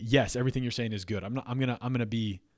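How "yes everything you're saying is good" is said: ordinary talk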